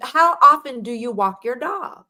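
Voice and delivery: put-on Jamaican accent. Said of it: "He has a heavy Jamaican accent".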